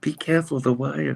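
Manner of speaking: small, little, high voice. Retelling what a woman said, in a little voice. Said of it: "you go like in a little voice".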